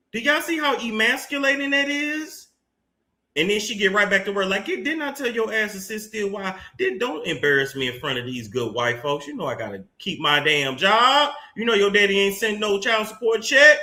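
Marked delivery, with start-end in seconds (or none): 4.7-13.8 put-on, scolding mother voice. Voicing a woman in a video scolding her man like a child: voicing a scolding mother. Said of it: "that's the energy it gave".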